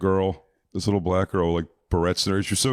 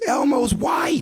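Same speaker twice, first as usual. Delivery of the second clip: mock shrill, very high child scream; 3 dB louder than usual. Retelling how a kid lifted the costume sleeve: imitating a kid screaming. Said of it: "lifts the sleeve up of the thing and screams".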